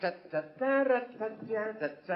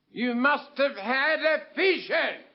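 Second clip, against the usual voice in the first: mild shout, kept contained; 4 semitones higher than usual. Repeating a line to a partner who didn't hear: shouting. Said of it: "There's no need to shout".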